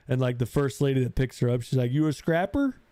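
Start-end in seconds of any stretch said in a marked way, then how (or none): 1.9-2.7 high, put-on small-town movie-character accent. Retelling a scene from a movie, imitating a character's accent. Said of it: "She's got that accent".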